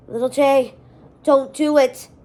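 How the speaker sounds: loud, strangled, choked-off rasping voice. A man nearly devoured by a shadow monster pleads, in a raspy strangled voice. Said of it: "Malik rasped in a strangled voice".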